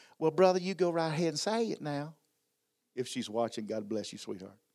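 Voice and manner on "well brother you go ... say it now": raised, high Southern Kentucky woman's drawl. Retelling asking Miss Sharon a hard question, imitating Sharon's Southern Kentucky drawl. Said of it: "she's got that Southern Kentucky draw".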